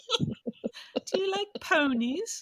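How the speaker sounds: put-on British accent pitched very high. The speaker voices a character in a scene, in a british accent. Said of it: "We do a good British accent".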